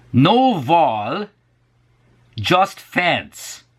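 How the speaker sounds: put-on Hungarian accent, high and sing-song.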